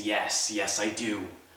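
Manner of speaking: very slow, drawn-out, snarling monster voice. Narrating a tale, the speaker voices the three-tongued beast's answer, snarling beast voice. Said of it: "And he snarls".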